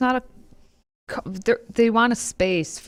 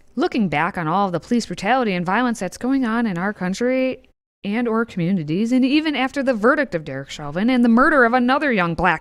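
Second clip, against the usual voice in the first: usual speaking voice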